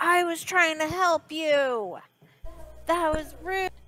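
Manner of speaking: acted character voice, yelling. Speaking in character, scolding someone she tried to help: yelling in character. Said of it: "She yells at Nick".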